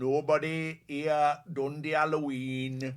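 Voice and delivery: slow, loud Manchester accent.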